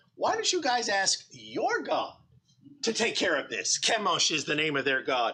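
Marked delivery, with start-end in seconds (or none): 0.2-3.8 mocking, sarcastic tone with swooping pitch. Retelling a leader's reply to a king: imitating a sarcastic retort. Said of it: "he's being sarcastic here".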